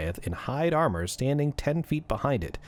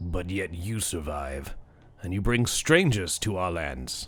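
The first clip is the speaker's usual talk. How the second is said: deep, low voice; 5 semitones lower than usual. A game narrator voices the speaker beyond the barrier in a deep voice. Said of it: "the voice again says".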